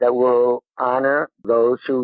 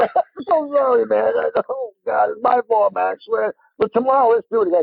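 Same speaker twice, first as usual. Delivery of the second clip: put-on laughing fit while talking, higher pitch; 10 semitones higher than usual. Retelling apologizing to a fallen friend while laughing: imitating own laughing fit. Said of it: "I just couldn't stop".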